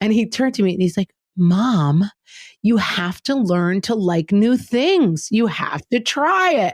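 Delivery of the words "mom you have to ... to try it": put-on, very slow, drawn-out, condescending lecturing tone. Retelling a son's words about trying new things: imitating a condescending tone. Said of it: "listening to him condescendingly be like".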